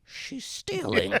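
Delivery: put-on very high, secretive old woman whisper. Retelling how a character whispers to Tony about the caretaker: imitating a whisper. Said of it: "when she whispers to Tony".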